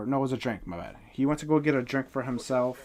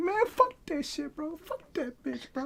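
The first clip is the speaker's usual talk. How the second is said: put-on drunken ranting, voice pitched way up. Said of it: "He's drunk as hell".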